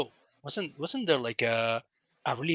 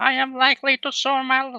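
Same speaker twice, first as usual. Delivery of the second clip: put-on nasal voice, higher and louder; 10 semitones higher, 9 dB louder than usual. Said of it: "who can do a better Jordan Peterson?".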